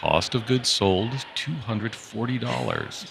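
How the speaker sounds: calm, pleasant, soothing radio-style read. Podcast guest, praised by the host for a soothing voice, demonstrates it: soothing podcast voice. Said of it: "I think I could listen to you like read an income statement".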